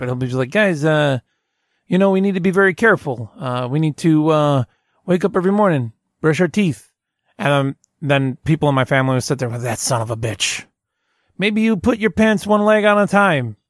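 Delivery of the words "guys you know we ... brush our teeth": bad, rough Italian accent. Imitating a man who gets angry sitting in his chair: bad italian accent. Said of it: "I don't do a very good Italian accent".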